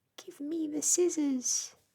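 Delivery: very small, very high crying voice. Reading a story aloud, voicing a crab that has shrunk: very small voice. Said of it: "crying in a very small voice".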